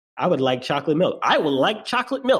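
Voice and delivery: mocking voice. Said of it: "they will literally mock your, the, the, the way you speak".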